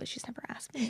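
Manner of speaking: soft, hushed, wistful whisper.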